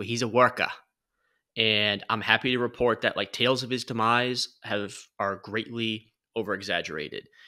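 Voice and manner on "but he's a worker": put-on Boston accent. Praising a player's work ethic: put-on boston accent. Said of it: "I'm gonna do my best Boston accent here".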